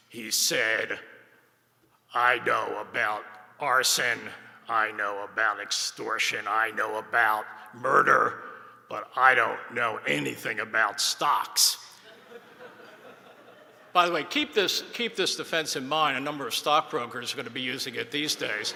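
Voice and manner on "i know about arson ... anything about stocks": heavily gruff, rough-edged voice. Act out Tramunti taking the stand at his stock fraud trial, in Tramunti's very gruff voice. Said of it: "in his very gruff voice".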